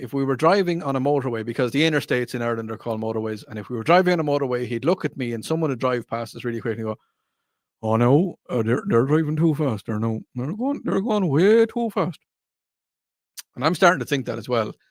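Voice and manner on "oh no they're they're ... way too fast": fatherly voice, stumbling over words with repeats. Imitating his dad on the motorway as a car speeds past, imitating my dad. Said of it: "I give you a full impression of my dad".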